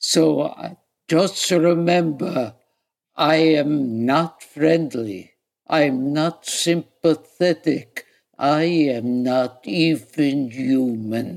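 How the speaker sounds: low-pitched, slow, unhurried delivery. Doing an impression of Rod Steiger as the warden in Convicts Four: Rod Steiger impression as warden.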